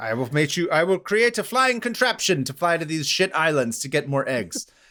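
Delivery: old-fashioned, put-on German accent. Joking about Charles Dilshaw wanting more eggs, done in an 1850s German accent. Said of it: "in an eighteen fifties uh, uh, German accent".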